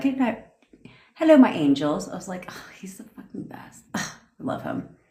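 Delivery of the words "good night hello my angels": put-on British accent, pitched-up voice. Act out Ryan greeting everyone on a team call, imitating Ryan's British accent. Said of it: "especially paired with a British accent".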